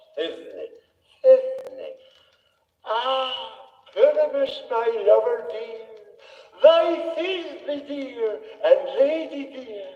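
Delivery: tiny, squeaky, high little voice. An actor offers to play Thisbe too, in a monstrous little Thisbe voice. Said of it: "I'd speak in a monstrous little voice".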